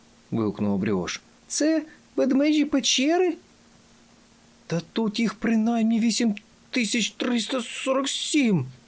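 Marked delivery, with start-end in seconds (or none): 4.7-8.7 groaning, much higher and slower. Fenek, gathered over the map with his companions, groaning. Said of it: "простогнав Фенек".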